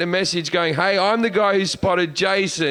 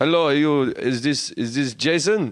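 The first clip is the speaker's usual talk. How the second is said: put-on German accent in a man's voice; 6 semitones lower than usual. Retelling a german fan recognizing a friend: imitating a german man. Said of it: "Like that, right?".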